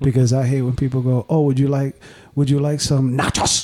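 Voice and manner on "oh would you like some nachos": over-enunciated fake Spanish accent, "nachos" overdone. Mocking people who over-enunciate Spanish words, imitating their over-enunciation. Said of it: "Don't try to over enunciate the things".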